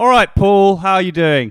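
loud, high-pitched hollering shout. Showing how he greets his neighbour, shouting to a neighbour. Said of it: "Why are you shouting at them?".

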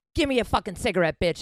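put-on really angry man. Retelling a man getting in the speaker's face for a cigarette: retelling an angry demand. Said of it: "Like really angry".

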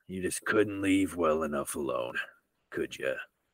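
impressive, low, soft, sultry seductive voice. Narrating the game, the speaker voices Sheriff Dixon after Eugene goes down; Sheriff Dixon voice. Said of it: "Impressive voice".

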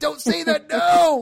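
very high, loud, drawn-out yell. Retelling reactions to a documentary, yelling at the tv: retelling own yelling at tv. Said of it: "yelling out loud to my T V".

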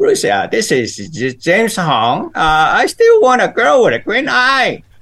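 swooping sing-song delivery, voice rising and falling. Doing his friend's voice on request, James Hong voice. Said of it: "I can do his voice for you right now".

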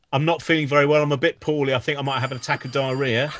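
ordinary talk, nothing marked

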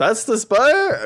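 acted complete disbelief. Retelling how a man reacted when shown the spire, imitating complete disbelief. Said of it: "in complete disbelief".

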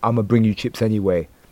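ordinary talk, nothing marked

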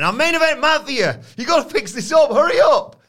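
shrill, very high, loud barked yelling. Retelling a backstage scene, imitating Scott Steiner yelling at a seamstress. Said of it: "He's just yelling at this poor seamstress".

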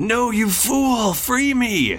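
very high, slow, drawn-out insistent tone. Voicing Teddy calling out from inside a trash can: Teddy's voice. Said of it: "from inside you hear Teddy go".

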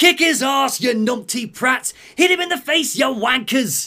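put-on shrill, very high Cockney shouting. Voicing cowering Penguin yelling at his men: Penguin yelling in Cockney.

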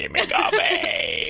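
possessed-sounding voice, high, slow, creaking shriek.

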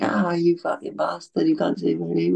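raw, furious acted-out scream, high and rough. Retelling how people screamed on hearing their names over the tannoy, imitating people screaming. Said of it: "we could hear them all screaming like".

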